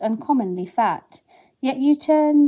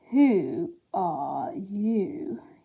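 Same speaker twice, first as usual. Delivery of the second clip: slow, drowsy, unhurried sleepy drawl; 2 semitones lower, 6 dB quieter than usual. A narrator reads the caterpillar's first question to Alice in a slow, sleepy voice. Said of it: "it was in a slow, sleepy voice".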